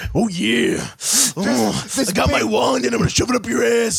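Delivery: swooping, animated voice with a long drawn-out mm. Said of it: "You're a wizard, Hulky".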